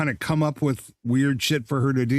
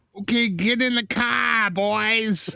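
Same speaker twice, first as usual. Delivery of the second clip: very exaggerated, high Boston accent, drawn-out "boys"; 8 semitones higher than usual. Retelling a movie scene of Odysseus addressing the troops: imitating a Boston accent. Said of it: "in the most Boston of Boston accents".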